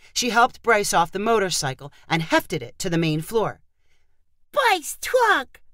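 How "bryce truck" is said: delighted, happy cry, very high-pitched. Narrator reading a boy's line about his toy, crying out happily. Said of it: "he cried happily".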